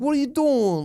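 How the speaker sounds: put-on high, slow, ugly American New Jersey accent. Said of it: "they talk like this".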